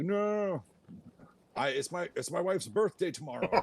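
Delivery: very high, frantic, panicked pleading scream. Game master voicing a peg-legged man carried off over the ocean, screaming. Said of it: "and he's screaming".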